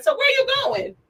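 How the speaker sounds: re-enacted shouting. Retelling shouting after a woman walking down the sidewalk, retelling a yell. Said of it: "so I start yelling".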